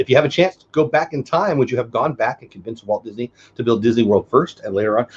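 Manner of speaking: normal talking voice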